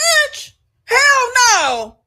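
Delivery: very high, shrieking, alarmed screaming. Mocking women who ignore red flags: intuition screaming. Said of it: "Intuition be screaming like".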